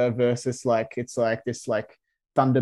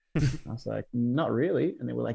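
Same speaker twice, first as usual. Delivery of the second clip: ordinary talk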